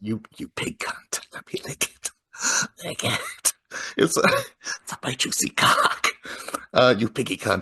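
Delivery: snarling voice broken up by laughter. Reading out notes on what an obscene caller says: imitating a snarling, laughing caller. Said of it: "all the snarls and laughing".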